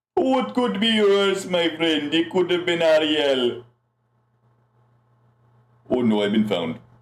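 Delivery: high-pitched cartoon crab voice. Voicing a character found in a pocket: Sebastian voice. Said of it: "You sound like the crab from fucking, uh, the Little Mermaid".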